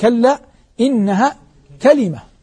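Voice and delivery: ordinary talk, nothing marked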